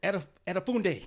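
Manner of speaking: high, loud, bad Nigerian accent.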